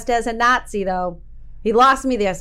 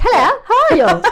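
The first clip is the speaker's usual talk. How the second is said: put-on British accent, pitched very high; 10 semitones higher, 7 dB louder than usual. Describing how someone's family talks, the speaker imitates a british accent. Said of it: "they talk like this".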